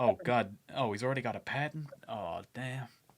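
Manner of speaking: grumbled mutter under the breath. In a roleplay scene, reacting to Nico's patent boast: Lydia muttering. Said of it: "Lydia just mutters".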